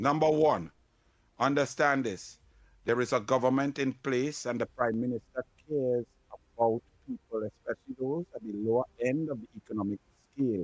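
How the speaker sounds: deep, low, intellectual voice.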